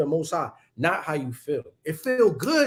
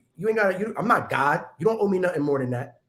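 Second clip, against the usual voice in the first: ordinary talk, nothing marked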